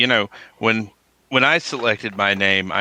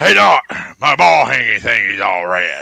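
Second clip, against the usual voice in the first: loud, put-on South Mississippi accent; 3 semitones higher, 7 dB louder than usual. A doctor retells a patient from South Mississippi, imitating his South Mississippi accent. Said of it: "he talked just like this".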